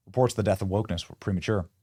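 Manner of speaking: ordinary talk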